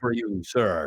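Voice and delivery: put-on stock robotic voice in old fifties sci-fi style. A speaker contrasting a robot character with an old fifties sci-fi robot voice. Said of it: "like the old fifties sci-fi robots".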